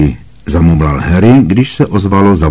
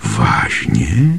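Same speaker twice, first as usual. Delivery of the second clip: soft, barely voiced half-whisper; 3 semitones lower, 6 dB quieter than usual. A professor responds to a boy describing what he sees, half-whispering. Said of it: "Zašeptala profesorka Triloniová".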